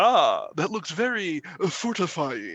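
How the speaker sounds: very slow celebrity voice, each word drawn out. Retelling a friend's story of being handed a giant breakfast plate: George Takei voice. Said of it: "I can't do a perfect version of his voice".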